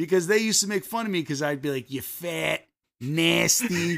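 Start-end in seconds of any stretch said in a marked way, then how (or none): 1.9-4.0 put-on Midwestern Chicago accent, hitting hard A's. Retelling how they used to tease their sister, in a Chicago hard-A accent. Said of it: "that Midwestern Chicago, like, hard A".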